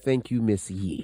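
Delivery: put-on humble tone. Thanking a co-host after the rumor report: put-on humble, broke voice. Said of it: "Trying to sound all humble and broke".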